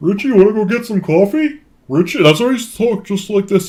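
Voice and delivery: dazed, heavily sedated-sounding voice, pitched high. The speaker imitates the man who once stalked them, in a heavily medicated voice. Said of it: "I bet he was heavily medicated".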